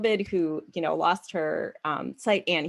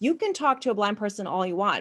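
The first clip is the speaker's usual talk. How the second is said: normal talking voice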